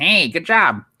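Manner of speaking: monstrous troll voice. Narrating the fight, the game master speaks as the troll, troll voice. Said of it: "the troll goes".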